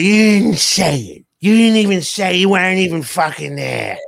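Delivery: put-on Italian mobster accent and gangster voice. Retelling how Tori defended Jenny: imitating Tori, Italian mafia style. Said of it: "that was an impression".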